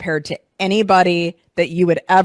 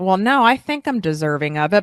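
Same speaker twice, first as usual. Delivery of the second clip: rising, question-like tune on final "it". Retelling an answer to a coach's question, with a rising, question-like ending. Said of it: "with a question mark at the end".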